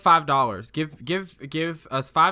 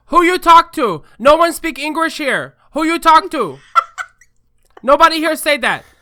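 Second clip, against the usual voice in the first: angry, shrill, furious yell, very high and loud; 13 semitones higher, 11 dB louder than usual. Recounting a restaurant dispute, the speaker retells a woman yelling at them: retelling her yell. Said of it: "she yells so that everyone can hear".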